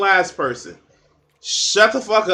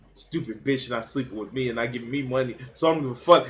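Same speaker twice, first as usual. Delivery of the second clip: low, muttered, grudging, jealous grumble; 6 semitones lower, 7 dB quieter than usual. Speaker mimics how a man sounds talking about a woman, mock-jealous man. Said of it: "Why does he sound jealous?".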